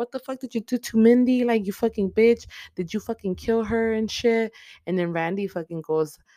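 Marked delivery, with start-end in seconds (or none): 0.0-4.5 all-out mock yelling, high and shrill. Retelling how Amber popped up, the speaker voices her yelling at someone: retelling a yell. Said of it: "she's yelling at her".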